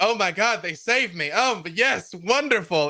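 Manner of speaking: loud, high yelling. In a game, a player's character, Art, yelling as he is saved. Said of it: "Art starts yelling like".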